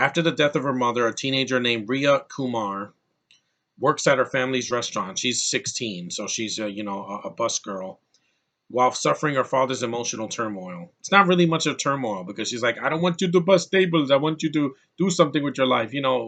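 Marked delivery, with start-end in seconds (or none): 12.8-15.9 put-on Indian accent. Retelling what the father in the movie tells his daughter: indian accent. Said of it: "an Indian accent".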